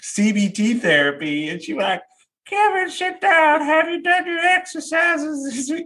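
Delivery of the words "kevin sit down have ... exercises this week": put-on old Southern lady voice, pitched very high. Quoting his elderly CBT therapist in a session, in a Southern old lady voice. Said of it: "I don't know why she sounds like a Southern old lady".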